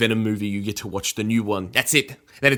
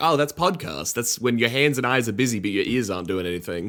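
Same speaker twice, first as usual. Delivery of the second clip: normal talking voice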